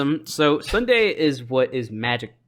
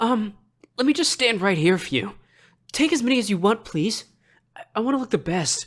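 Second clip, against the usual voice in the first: shy, timid anime character voice, pitched up; 9 semitones higher than usual. Imitating a guy posing for photos at a convention, shy beta anime character voice. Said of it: "he literally was just like".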